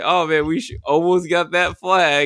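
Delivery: put-on sarcastic tone. Retelling what he says to teammates in an online match, mock sarcastic remark. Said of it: "if I sarcastically say something like".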